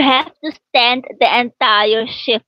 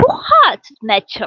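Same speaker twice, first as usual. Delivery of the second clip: pitched-up Netherlands Dutch accent; 5 semitones higher than usual. Speaker contrasts Netherlands and Surinamese Dutch: Netherlands Dutch accent. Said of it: "Netherlands they talk they talk like this".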